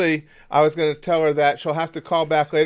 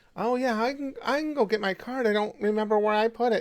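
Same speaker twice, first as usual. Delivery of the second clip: fake, more pathetic, pitched-up old-person voice; 6 semitones higher, 6 dB quieter than usual. Showing how a caller should sound: put-on older, more pathetic voice. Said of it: "I gotta sound a, a little bit older".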